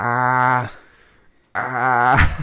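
very loud ah, held and drawn out. Picturing a cartoon character stumped for a password: Peter Griffin voice. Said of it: "I picture Peter Griffin just like".

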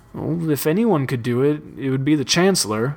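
plain

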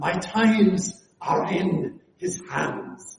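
put-on very slow, deliberate Scottish accent. Quoting a pastor's repeated sermon verse: Alistair Begg Scottish accent. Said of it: "he said it just like that".

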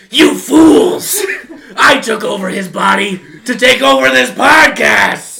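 demonic, possessed-sounding voice. Podcast host pretending to have taken over Jacob's body, in a demon voice. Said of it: "sounding like a demon".

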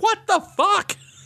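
mock, shrill, very high yelling outburst. Recounting playing a baffling JRPG scene: retelling his own yell. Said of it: "I'm just yelling".

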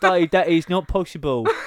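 put-on Cockney accent, very loud and high. Riffing on a dub just described, imitating a Cockney accent. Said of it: "some Cockney going".

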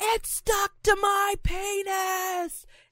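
slow, high-pitched panicked scream.

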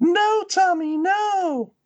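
very high put-on female scream, stretched-out "no". Narrator reading a sister's scream in the boy's memory, put-on female voice. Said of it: "That's my awesome female voice".

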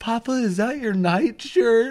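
very high, coy, innocent put-on voice. Retelling how a buddy asked his dad a question, imitating a coy voice. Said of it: "this coy voice".

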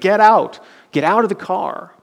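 put-on, high-pitched, mild shout. Retelling how a friend shouted at him after a crash: imitating a friend shouting. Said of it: "he's shouting at him".

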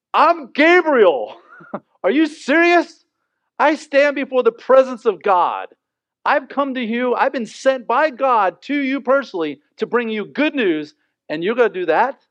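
loud, high, angry tantrum-like rant. Retelling the angel Gabriel answering the doubting Zechariah: loud voice. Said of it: "I expect in a really loud voice".

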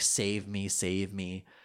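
soft, tearful crying voice. Describing a bruised, crying character in a scene, imitating crying out. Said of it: "sort of crying out like".

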